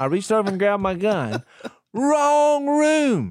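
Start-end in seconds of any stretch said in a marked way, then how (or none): 1.9-3.3 very high-pitched shouting. Retelling a night knock on a hotel door, imitating someone yelling. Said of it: "You're just yelling through the door".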